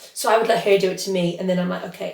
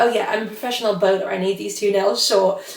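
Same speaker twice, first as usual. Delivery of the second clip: ordinary delivery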